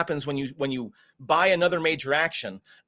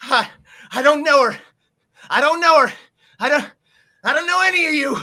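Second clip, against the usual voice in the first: very high, very loud shout with cracking voice; 11 semitones higher, 9 dB louder than usual. Game master voicing a man with a shotgun before combat, voice cracking, calling out. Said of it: "his voice cracks as he calls out".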